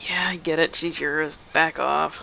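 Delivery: soft, grumbling mutter under the breath. Game narrator voicing a man's reply, muttered under his breath. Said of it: "he kind of mutters under his breath".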